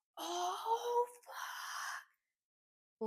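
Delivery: mock, very high yelp of pain. Retelling dropping a weight on her toe at the gym: imitating her own pained yell. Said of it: "and I yelled".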